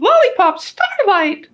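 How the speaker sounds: very high, piping little character voice. Speaker voices a woman stripper who leaps up, in a super high-pitched voice. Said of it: "In a super high-pitched voice".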